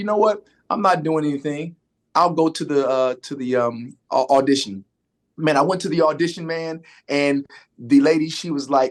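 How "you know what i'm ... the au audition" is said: plain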